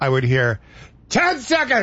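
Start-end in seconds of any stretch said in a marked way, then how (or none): 1.1-1.8 sudden, very high, full-voice delivery. Speaker recalling a timing cue heard in the ear: full-voice timing cue. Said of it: "full voice".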